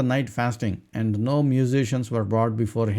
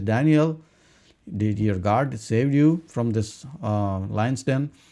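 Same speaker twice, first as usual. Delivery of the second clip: normal talking voice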